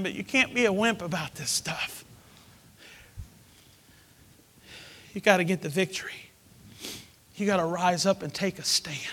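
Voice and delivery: in tears. You admit to your listeners that you are crying and keep on urging them, crying. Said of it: "I know I'm crying".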